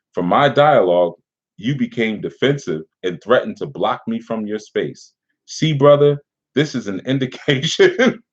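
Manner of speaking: fighting back laughter, barely holding it together. Reading a message aloud, trying not to laugh. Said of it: "I'm trying to get through this without laughing".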